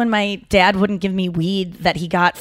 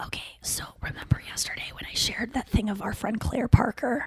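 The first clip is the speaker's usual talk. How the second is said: hushed whisper under the breath, barely audible; 3 semitones higher, 9 dB quieter than usual. Reminding the group about something shared yesterday, whispering. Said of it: "I don't know why I'm whispering".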